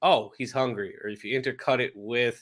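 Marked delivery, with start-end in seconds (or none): none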